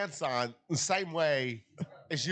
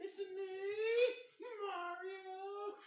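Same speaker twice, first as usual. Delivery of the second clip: very high, slow voice, "me" drawn out; 10 dB quieter than usual. Correcting another speaker's version of the Mario line: Nicolas Cage as Mario voice. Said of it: "No, it'd be".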